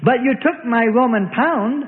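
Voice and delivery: sudden, bursting, explosive outburst, pitched high. A fat man at the temple answers the money changer: exploding outburst. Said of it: "the flesh-faced fat man explodes".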